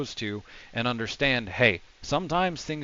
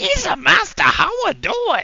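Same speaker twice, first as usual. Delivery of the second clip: put-on alien character voice, higher and louder; 11 dB louder than usual. Imitating how a character talks, saying "Isa": Jar Jar Binks voice. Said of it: "imagine if he says "Isa" because that's how he talks".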